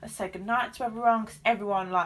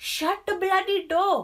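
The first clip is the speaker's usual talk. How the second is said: clumsy, bad put-on Italian accent, high and slow; 9 semitones higher, 4 dB louder than usual. Retelling what a man at reception told the speaker: bad italian accent. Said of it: "I cannot do an Italian accent".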